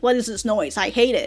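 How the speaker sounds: normal talking voice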